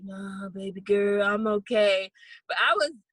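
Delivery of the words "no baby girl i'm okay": put-on tired, weary voice. Retelling a phone call from Dad: imitating Dad sounding tired. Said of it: "he sounded all tired".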